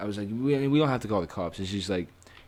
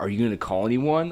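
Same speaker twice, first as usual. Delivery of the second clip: mock patronizing, superior, talking-down tone; 2 semitones higher, 3 dB louder than usual. Retelling what she asked before the call: imitating a condescending tone. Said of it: "kinda being condescending".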